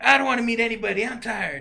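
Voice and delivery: high, whiny, screechy little voice. Retell how the ukulele player refused a meet and greet, in a put-on whiny, screechy Cartman-like voice. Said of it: "he had this little whiny, screechy voice".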